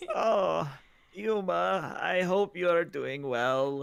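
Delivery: high, slow, put-on elderly woman's voice. Voicing a message addressed to Yuma, in an old lady voice. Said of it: "let me do old old lady voice".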